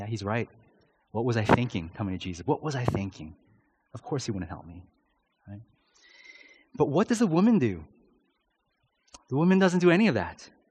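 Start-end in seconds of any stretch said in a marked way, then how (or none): 0.0-4.8 dejected, defeated, hangdog, giving-up voice. Acting out a listener who hangs their head and walks away: acted dejected head-hanging reply. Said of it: "hang our heads".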